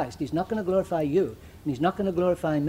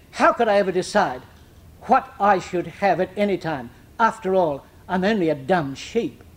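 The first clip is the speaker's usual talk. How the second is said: put-on lofty, condescending, superior lady's voice. Speaker retells a lady's reply when asked what she will have: mock-haughty. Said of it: "very haughtily she said".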